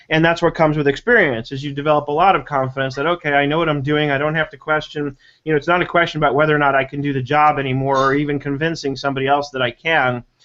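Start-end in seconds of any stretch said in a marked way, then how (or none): none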